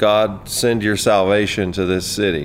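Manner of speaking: normal talking voice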